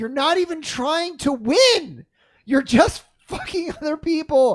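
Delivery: high, furious, play-acted screaming rant. Retelling a Mario Party game against a griefing friend: imitating someone screaming in anger. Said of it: "where I'm screaming at him".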